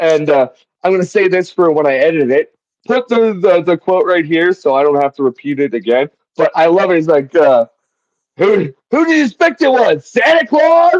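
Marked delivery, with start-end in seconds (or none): 7.3-11.0 mock yell, much higher, slower. Quoting a line whose delivery the speaker loves, retelling a yell. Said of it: "he just yells it so like".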